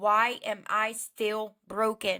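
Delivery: ordinary talk, nothing marked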